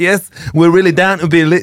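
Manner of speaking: high put-on posh accent. Recounting how some people were talking, imitating a posh accent. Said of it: "Plan B was also talking like this".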